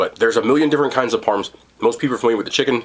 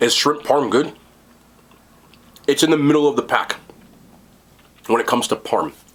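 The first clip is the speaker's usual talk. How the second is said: speech muffled by food in mouth; 3 semitones higher than usual. Reviewing a shrimp parm sandwich while eating, talking with mouth full. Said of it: "talk too much in my mouth full".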